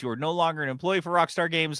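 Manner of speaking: formal, official, announcer-like tone. Acting out hr firing an employee on the phone: acting as hr firing someone. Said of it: "I am human resources for Rockstar Games".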